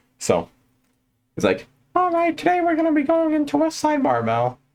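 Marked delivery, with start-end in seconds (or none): 2.0-4.5 very high, animated voice swooping up and down. Imitating a powerlifting coach introducing the gym: Louis Simmons impression. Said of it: "the voice of a nice old man".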